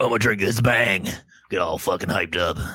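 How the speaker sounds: very deep, very low horror-film cannibal voice. Saying they will drink a Bang before the trailer: Hills Have Eyes cannibal voice. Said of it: "Hills Have Eyes cannibal voice?".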